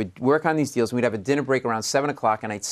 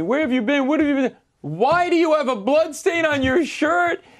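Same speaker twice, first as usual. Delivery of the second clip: furious, shrill screaming, very high pitched. Retelling the senior partner's reaction when the speaker returns to the firm; imitating someone screaming. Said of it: "My senior partner's screaming at me".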